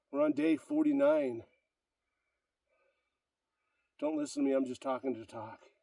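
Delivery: catching breath. Talking on day forty-nine of a workout streak, out of breath. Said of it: "Trying to catch my breath".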